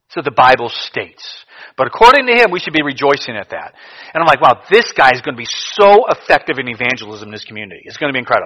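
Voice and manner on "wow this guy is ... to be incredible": ordinary talk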